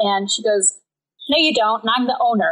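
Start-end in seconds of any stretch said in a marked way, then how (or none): 1.3-2.5 put-on, blunt, super tough, no-nonsense tone. Retelling how a woman confronted a new worker: imitating someone super tough. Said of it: "Like, super tough".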